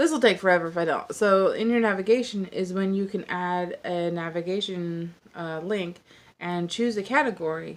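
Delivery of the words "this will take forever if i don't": quick, hurried delivery. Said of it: "I know I'm talking fast".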